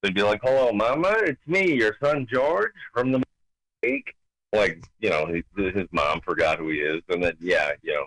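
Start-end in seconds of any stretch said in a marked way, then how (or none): 0.4-4.1 put-on corny old-time vaudeville comic joke delivery. Retelling an old vaudeville joke: George Jessel voice. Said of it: "George Jessel was the other voice".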